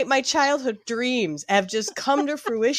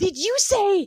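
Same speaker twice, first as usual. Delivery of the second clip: acted-out delighted, gleeful burst, high and joyful; 8 semitones higher than usual. Speaker retelling a woman's reaction on walking in, imitating a joyful exclamation. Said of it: "her joy when she walks in, she goes".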